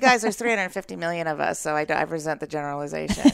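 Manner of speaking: plain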